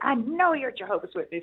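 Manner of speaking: mock yelling, mild and kept small. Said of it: "he's screaming and yelling at us".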